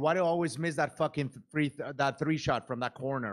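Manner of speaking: ordinary delivery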